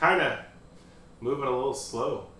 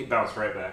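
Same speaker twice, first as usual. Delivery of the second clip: plain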